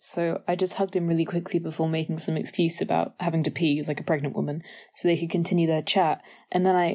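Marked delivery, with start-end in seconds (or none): none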